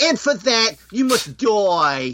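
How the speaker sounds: put-on very high, slow thick Brooklyn accent, "die" stretched out. Quoting a character from the Power Records, Francine's thick Brooklyn accent. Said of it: "Francine's got a really thick, like, Brooklyn accent".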